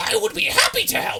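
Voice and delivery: very loud, shrill, high, rasping bird screech. The looming bird figure answers the thanks: loud screeching Aarakocra voice. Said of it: "you hear a loud, screeching voice cry out".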